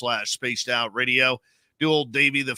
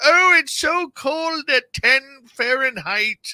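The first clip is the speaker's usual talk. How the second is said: mocking voice, high and slow. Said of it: "he's typing in there".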